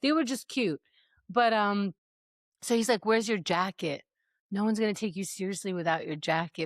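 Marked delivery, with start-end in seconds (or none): 3.1-6.7 mock disapproving tone with open disgust. Retelling what he said about her missing jacket: imitating a disgusted tone. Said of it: "But he's so disgusted".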